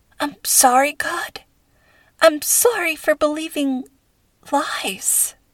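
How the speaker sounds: whispering. Lying on the floor, speaking to god in prayer, whispered. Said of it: "she whispered".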